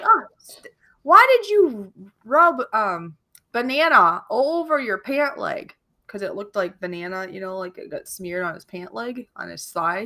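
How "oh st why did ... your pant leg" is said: high, drawn-out, loud yell. Retelling how a lady at church camp yelled at her husband: imitating someone yelling. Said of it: "was yelling at her husband".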